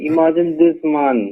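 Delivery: ordinary delivery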